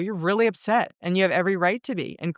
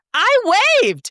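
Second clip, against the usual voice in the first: very high, shrill, loud yelled line; 8 dB louder than usual. Retelling yelling back at a construction person: imitating yelling back. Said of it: "and then I yell back".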